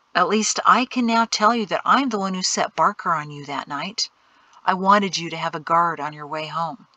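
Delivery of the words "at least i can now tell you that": ordinary delivery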